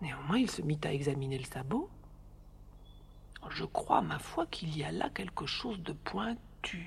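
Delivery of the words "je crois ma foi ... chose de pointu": murmured softly, quieter and slower. Narrating a father examining a horse's hoof, talking to himself: murmured.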